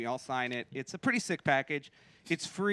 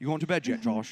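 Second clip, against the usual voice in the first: put-on English accent; 3 semitones lower than usual. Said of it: "he texts me in an English accent".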